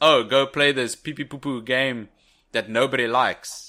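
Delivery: ordinary talk, nothing marked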